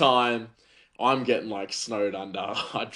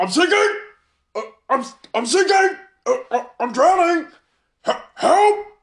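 mock full panic, much higher, louder; 10 dB louder than usual. Telling how he suddenly panicked while she worked: imitating his panicked cry. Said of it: "he just goes into full panic mode".

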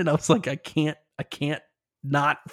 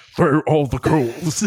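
put-on old wizard voice, louder; 5 dB louder than usual. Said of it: "That was a solid Gandalf".

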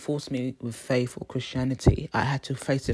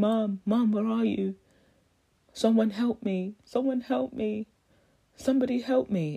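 put-on young girl's voice, high, desperate crying; 9 semitones higher than usual. Retelling hearing a young girl's voice, imitating a girl crying for help. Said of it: "she was crying for help".

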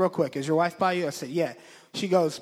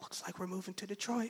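much quieter whispered voice; 3 semitones higher, 15 dB quieter than usual. Retelling driving and breaking news to his passenger, whispered to her. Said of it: "I whispered to her".

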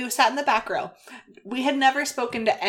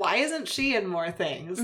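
usual speaking voice

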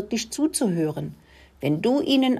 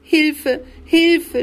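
loud, high, shrill scream; 8 semitones higher, 6 dB louder than usual. Reading Rudi's line as Caruso's claws dig into his tail, screaming. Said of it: "schrie er".

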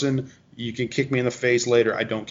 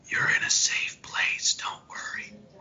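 gentle, soft, hushed whisper under the breath. Retelling what he tells people in a gun store, in a soft whisper. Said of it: "I'll whisper in a soft voice".

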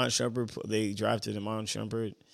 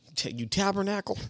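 very high yell with a Southern twang; 10 semitones higher than usual. Joking about coaching against a trash-talking rival: imitating Philip Rivers yelling. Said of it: "with his southern accent".

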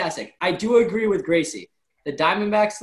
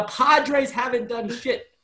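ordinary talk

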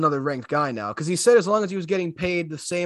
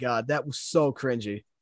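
usual speaking voice

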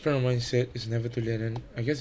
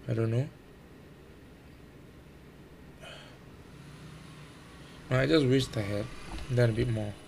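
voice heavy with audible disappointment. Reflecting on their own situation, the speaker sounds disappointed. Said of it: "you can hear the disappointment in my voice".

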